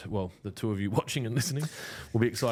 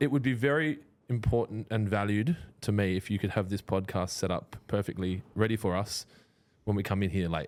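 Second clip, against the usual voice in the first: normal talking voice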